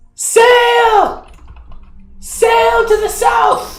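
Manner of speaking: goblin voice, very high, shrill, carrying cry. Game master voicing a goblin who spots a sail to the south: goblin shouting. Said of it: "one of the goblins shouts".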